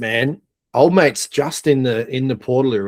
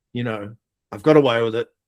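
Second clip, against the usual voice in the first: ordinary delivery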